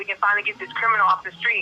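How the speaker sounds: ordinary talk, nothing marked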